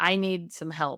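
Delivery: put-on hysterical sobbing voice. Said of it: "crying hysterically and saying".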